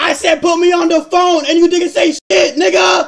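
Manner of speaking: shrill, high-pitched, very loud shouting. Talking to Carlos on a live stream; yelling. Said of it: "you're yelling like a buffoon".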